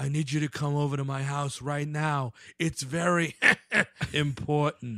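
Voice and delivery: utterly deadpan, unreadable, dead flat, emotionless voice. Retelling a woman's urgent call, imitating a dead flat voice. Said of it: "in the deadest voice possible where you don't know where she's coming from".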